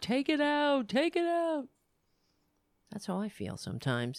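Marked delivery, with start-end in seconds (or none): 0.0-1.7 very high tearful wail, crying. Retelling a scene where Data begs Captain Picard: imitating Data crying. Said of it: "he was crying to Captain Picard".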